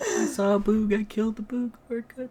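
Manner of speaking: very high, gentle, drawn-out slow delivery. Repeating the other speaker's line about the bug: imitating someone speaking softly. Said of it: "That was so soft".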